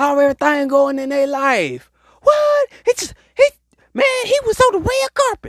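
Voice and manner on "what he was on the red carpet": squeaky voice, much higher pitch. Speaker reacting aloud, then apologizing for it, squeaky voice. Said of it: "Sorry for my squeaky voice".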